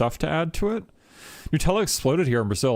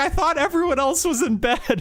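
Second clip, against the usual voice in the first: put-on laughing while talking, higher; 3 dB louder than usual. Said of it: "bursts out laughing".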